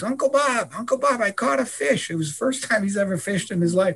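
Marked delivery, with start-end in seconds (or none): 0.0-2.1 put-on high, all-out scream with full force. Retelling how a boy called out after catching a fish: imitating someone screaming. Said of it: "he starts screaming at the top of his lungs".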